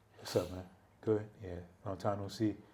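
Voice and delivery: very low, very quiet, flat deadpan monotone. Imitating how someone talks when greeting: flat monotone voice. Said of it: "Like you have the monotone voice like that. He was just like this".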